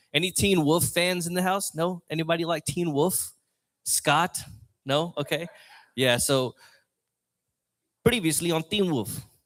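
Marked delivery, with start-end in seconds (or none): 6.1-9.1 put-on South African accent. Trying out an accent on the audience, South African accent. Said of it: "That's my that's my my my South African accent".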